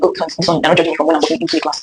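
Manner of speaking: normal talking voice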